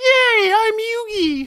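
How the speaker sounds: put-on very high, very loud, squeaky childlike cheer. Contrasting the two characters: imitating Yugi's high-pitched voice. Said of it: "compared to Yugi is like".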